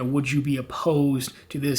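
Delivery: ordinary talk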